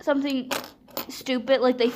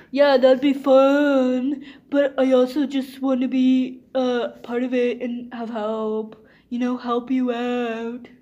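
irritating put-on voice, much slower. Retelling what they said to someone who wanted to take charge, in a very annoying voice. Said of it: "I'm using that very annoying voice".

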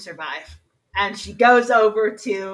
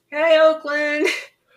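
faint, weak, high, faraway calling voice; 6 semitones higher, 4 dB louder than usual. Frank calls out to the others while they look for him, in a faint voice. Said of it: "You hear this faint voice going".

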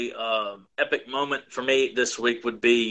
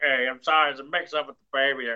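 put-on drunk stork voice with hiccups; 2 semitones higher than usual. Imitating the drunk stork from the Looney Tunes cartoon: put-on drunk voice. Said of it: "he's like the drunk stork".

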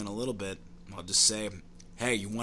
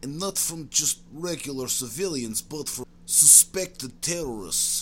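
pitched-up, put-on Russian accent, broken English; 5 semitones higher than usual. A former KGB man recounts his interrogation work, in an ex-KGB Russian character voice. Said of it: "Circa 1987, KGB scientists came to conclusion that LSD does in fact enhance creativity. It was around this time the scientists started dosing you regularly with LSD. I guess maybe they were tired of old turnip jokes and wanted me".

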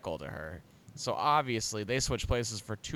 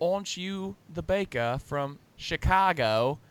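bad half British accent, pitched up, slipping in and out; 5 semitones higher than usual. Speakers recall a Christmas movie scene, imitating Vanessa's bad half accent. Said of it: "you aren't saying all the words in an accent".

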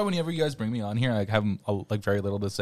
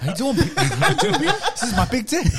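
very high-pitched, loud voice; 7 dB louder than usual. Joining the joke about the trailer: Mark Wahlberg impression. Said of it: "It's Mark Wahlberg".

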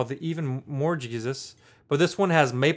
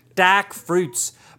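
put-on Australian accent. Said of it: "it's gonna go Australian".

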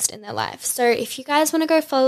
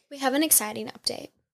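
overly solemn, fake-serious announcer voice; 3 semitones higher, 7 dB quieter than usual. Announcing an update to listeners: mock-serious announcement. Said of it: "I said that very seriously".

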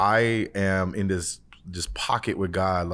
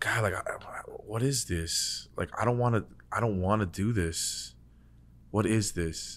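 acted pleading voice, halting and stumbling over words; 6 dB quieter than usual. Retelling own words to god while in a state of giving up: retelling own pleading. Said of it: "position of just pleading with the Lord".

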